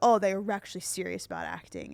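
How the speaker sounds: ordinary talk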